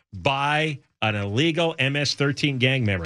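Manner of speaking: ordinary delivery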